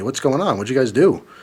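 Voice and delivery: ordinary talk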